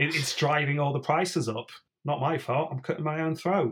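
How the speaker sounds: put-on broad London street Cockney accent. Voicing a young peddler boy answering a complaining customer: Cockney accent. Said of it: "I'm imagining them with a Cockney accent".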